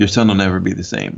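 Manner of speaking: normal talking voice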